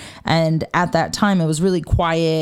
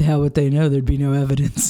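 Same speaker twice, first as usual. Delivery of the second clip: mock, really creepy, quick delivery; 3 semitones lower than usual. Retelling Zach's reply to a woman's story; imitating Zach being creepy. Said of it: "And Zach being like really creepily is like".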